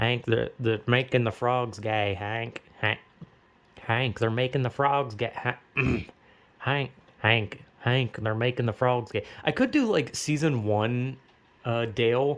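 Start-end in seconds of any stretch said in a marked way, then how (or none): 0.0-9.2 paranoid conspiracy character voice. Speaker tries a conspiracy-minded cartoon voice addressing Hank: Dale voice. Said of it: "try to do the voice".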